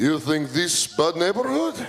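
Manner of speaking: heavy fake Russian accent. Retelling two guys approaching late at night, replying in fake Russian accent. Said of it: "I fake a Russian accent".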